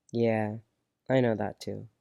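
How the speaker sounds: ordinary delivery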